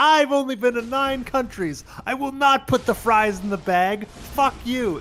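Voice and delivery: high, furious, worked-up, upset screaming. Retelling how a streamer screams when upset: imitating World of T-shirts screaming upset. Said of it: "When he screams at people when he's upset".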